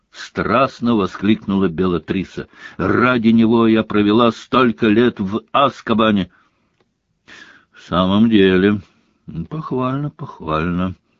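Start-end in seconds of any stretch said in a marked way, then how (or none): 7.7-11.0 bored tone, drawling. He answers Bellatrix's passionate outburst in a bored drawl. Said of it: "Скучающим тоном протянул Снег".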